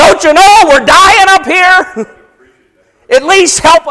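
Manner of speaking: very high, loud, shrill, frightened put-on cry. Imagining the disciples calling out to their Master, acting out scared disciples. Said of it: "They're scared".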